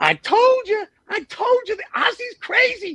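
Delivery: squeaky, very high-pitched voice. Retelling what an assistant coach said about the Aussie, do a squeaky Mike Schuler voice. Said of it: "he had this squeaky voice".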